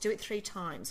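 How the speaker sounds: plain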